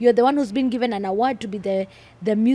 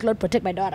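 lower, mock whisper; 3 semitones lower, 3 dB quieter than usual. Acting out mom praying somewhere for her safety: imitating a whispered prayer. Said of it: "she's whispering".

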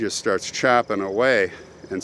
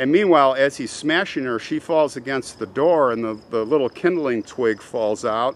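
ordinary delivery

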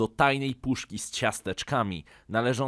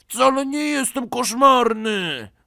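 high-pitched, heated, shouted yelling; 12 semitones higher, 8 dB louder than usual. A narrator reads the brother's retort to his mother, yelling. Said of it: "wrzasnął Karolek".

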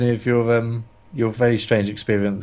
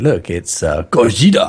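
loud, terrible, fake put-on Japanese accent; 4 semitones lower, 5 dB louder than usual. Retelling saying the monster's name while watching: terrible put-on japanese accent. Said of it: "I tried to do a Japanese accent".

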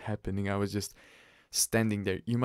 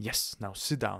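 ordinary talk

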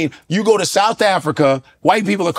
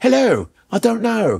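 mock British accent, higher pitched; 4 semitones higher than usual.

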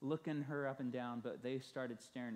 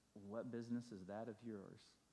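muttered under breath, quieter; 2 semitones lower, 6 dB quieter than usual. Retelling a minister's private reaction to a nosy question: muttering under his breath. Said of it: "Under his breath, Fred mutters to himself".

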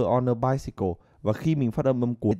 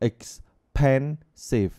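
expensive with stress on the second syllable, pen. Explaining English word stress in Vietnamese, stress on pen in expensive. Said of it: "Các bạn phải phải nhấn vào âm thứ hai này".

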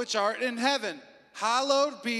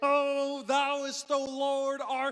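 showy, weird, fancy put-on prayer voice; 3 semitones higher than usual. Speaker mocking how some people talk when they pray, weird put-on prayer voice. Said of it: "They put on a weird voice".

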